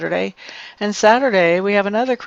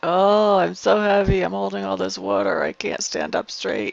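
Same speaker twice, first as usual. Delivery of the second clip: pitiful, pathetic put-on voice. Voicing an overwatered aloe plant that cannot stand up: pathetic put-on aloe plant voice. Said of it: "She looks so f-, pathetic".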